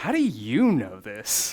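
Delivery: so shocked it sounds rude, swooping pitch. Retelling asking mom a question: imitating a very shocked tone. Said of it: "in a very shocked, like, so shocked, it comes off as rude".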